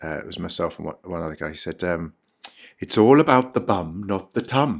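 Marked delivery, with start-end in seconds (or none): 2.8-4.8 put-on Welsh accent, slow and deliberate. Retelling what a man said to them, imitating a Welsh accent. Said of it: "excuse my Welsh accent".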